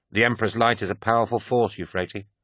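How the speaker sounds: plain reading voice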